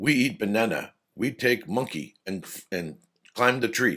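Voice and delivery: very basic broken English with grammar dropped. Explaining how a learner's English can come across, talking in Tarzan-style broken English. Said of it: "I'm just trying to think like Tarzan".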